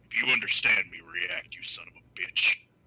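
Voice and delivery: very low muttering under the breath. A player voices his character muttering toward Barty, muttering. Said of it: "he just mutters in Undercommon".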